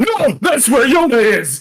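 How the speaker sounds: shrill, very high, loud screaming outburst. Reenacting game dialogue about a beast heading for the church: imitating a character screaming. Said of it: "just to hear him scream at random times".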